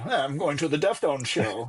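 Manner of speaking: put-on talking like an elderly man. Repeating own words to mock how they sounded: mock old man voice. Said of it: "I sound like an old man".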